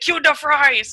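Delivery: odd, goofy, weird put-on Chinese accent. Recalling a fellow player during a video game, quoting him in a weird chinese accent. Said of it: "this weird Chinese accent".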